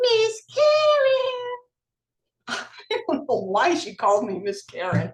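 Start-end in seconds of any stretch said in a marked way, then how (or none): 0.0-1.5 very high, whiny, pterodactyl-like screech. Imitating a woman calling over the cubicle wall, in a whiny pterodactyl voice. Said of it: "in her whiny pterodactyl voice".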